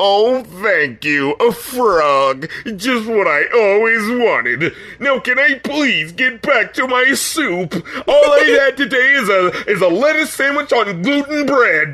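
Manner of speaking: the whiniest voice, slow and drawn out. Quoting the dude thanking someone for a birthday present: imitating a whiny voice. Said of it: "the fucking dude had the whiniest voice".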